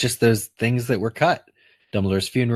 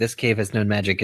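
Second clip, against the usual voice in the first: ordinary talk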